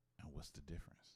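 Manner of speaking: quiet, soft near-mic voice. Asking a guest a follow-up question, talking softly into the mic. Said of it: "Why am I talking so soft in the mic?".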